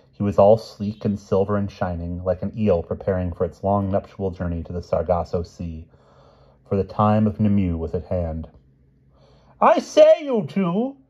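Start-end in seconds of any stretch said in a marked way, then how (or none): 9.6-10.9 very high, very slow, drawn-out shout. A king calls out to two people the moment he spots them; shouted. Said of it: "shouted King Pellinore".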